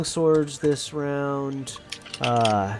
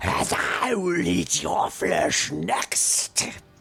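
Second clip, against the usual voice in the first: unsettling, eerie, disgustingly strange monster voice; 3 semitones higher than usual. Game master voicing a monster turning to speak to a player, disgustingly strange, eerie voice. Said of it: "in the most disgustingly strange and eerie voice".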